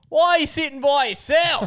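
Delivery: put-on shouting. Retelling a man who yelled out while you had one headphone in, imitating him shouting. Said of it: "he's shouting as though he's about 25".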